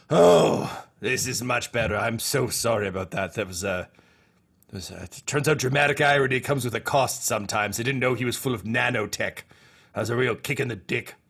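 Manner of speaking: scheming villain character voice. Voicing Palpatine as the lightsaber returns: Palpatine voice. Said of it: "you just hear Palpatine go like".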